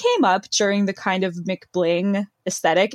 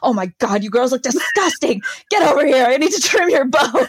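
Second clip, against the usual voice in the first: acted-out, frazzled, stressed, bossy tirade; 4 semitones higher, 3 dB louder than usual. Retelling a scene from the next episode: imitating a bossy designer. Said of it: "an absolute terror backstage".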